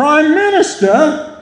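mock, very high, loud shout. Speaker retells a show scene where a man yells out a window, retelling a yell. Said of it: "He yells".

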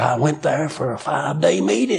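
put-on rough, worn-out, gravelly voice. Quoting an aged man from church, imitating his rough, gravelly, worn-out voice. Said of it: "rough, gravelly, worn-out voice of his".

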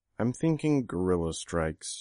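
ordinary delivery

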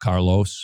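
very deep, low, bottomed-out voice. Retelling how a person gave their real name: imitating a deep voice. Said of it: "And Diana said in a deep voice".

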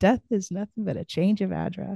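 put-on strong Trinidadian accent. Repeat the saying of a lovely lady you both remember, in a heavy Trinidadian accent. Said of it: "with a heavy Trinidadian accent".

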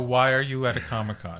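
ordinary talk, nothing marked

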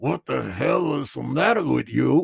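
creaky ventriloquist voice through unmoving lips. Retelling doing teachers' voices among the other boys, teacher voice without moving lips. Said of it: "without moving my lips".

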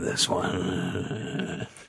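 breathy, whispered put-on voice. Answering a dialogue choice after being asked: Geralt voice. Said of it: "Do it in your Geralt voice".

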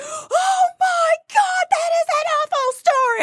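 very high, shocked exclamation. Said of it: "They're like".

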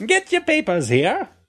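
put-on old-timey New York newsboy accent. Trying the accent another speaker asked for, in an old-timey New York accent. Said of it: "Old timey New York".

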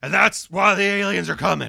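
hard, loud, raspy voice. Showing a terrible impression of Alex Jones. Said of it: "terrible Alex Jones impre-".

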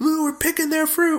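high, sneering, mocking heckler voice.

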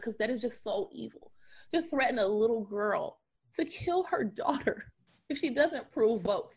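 tearful voice on the verge of crying. Addressing the audience, the speaker admits to tearing up: tearing up. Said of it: "That's why I'm kind of tearing up".

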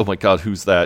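usual speaking voice

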